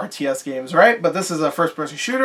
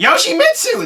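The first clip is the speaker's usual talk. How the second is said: very high character voice; 12 semitones higher, 5 dB louder than usual. Trying again to voice a game character's line after a failed attempt: Yoda voice. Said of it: "That's Yoda".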